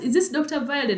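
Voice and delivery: acted thrilled, eager, excited, high-pitched voice. Retelling a phone call from a caller: imitating an excited caller. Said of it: "She sounded very excited and she asked".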